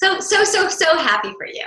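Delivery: hollow, forced gushing. Speaker shows how feeling less comes through when praising others; insincere congratulating tone. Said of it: "It's always in the tone".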